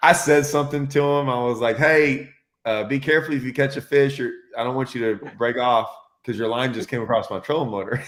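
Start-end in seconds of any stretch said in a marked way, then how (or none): 1.8-8.0 mock, heavily sarcastic, put-on polite courtesy. Recounting a boat trolling too close, the speaker replays what he told its fisherman: retelling a sarcastic warning. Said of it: "me being really sarcastic to this guy".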